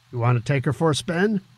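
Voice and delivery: ordinary talk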